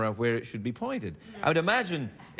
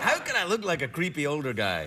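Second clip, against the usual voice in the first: ordinary delivery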